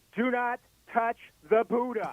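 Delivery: put-on godlike voice, loud, high, ringing. Retelling a guard's warning from the upper deck: imitating a voice of God ringing out. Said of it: "like the voice of God rings out".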